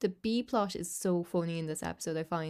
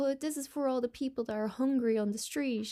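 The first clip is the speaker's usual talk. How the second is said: acted, high, earnest, emotional, heartfelt pleading voice; 7 semitones higher than usual. Retelling a scene where Lisa interrupts practice, imitating Lisa's emotional speech. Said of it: "she's giving this big emotional speech".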